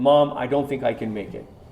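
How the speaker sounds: plain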